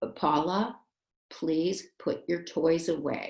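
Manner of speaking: slow, measured, serious tone. Teaching a class, speaker demonstrates giving an instruction: serious voice. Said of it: "I'm going to use a serious voice".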